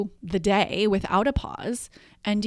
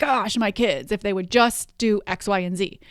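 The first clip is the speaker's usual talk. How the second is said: exasperated, fed-up, at-wits'-end complaining tone. Acting out what parents say about their kids: imitating an exasperated tone. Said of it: "in an exasperated tone".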